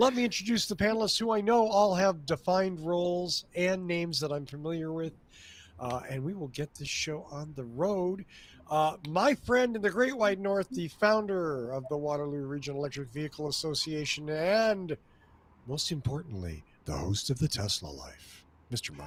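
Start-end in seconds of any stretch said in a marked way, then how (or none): 9.1-19.1 announcer-style radio host delivery. Host introducing a panelist on the show, radio voice. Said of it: "love that radio voice".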